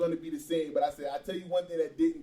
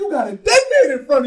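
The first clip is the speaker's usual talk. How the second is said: very loud, fired-up screaming, high and loud; 9 semitones higher, 10 dB louder than usual. Retelling what a man told his fighter at the Tyson fight, imitating someone screaming at a fighter. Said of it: "he's like screaming at him".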